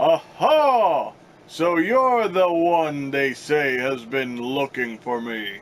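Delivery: pompous, slow, grandly drawled character voice. Giving a new figure a character voice, pompous Professor Port voice. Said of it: "we're gonna go with the voice of Professor Port from RWBY for this guy".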